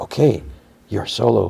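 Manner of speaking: put-on whisper. Retelling a TV scene where a character gives in: imitating a whisper. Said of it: "And she whispers".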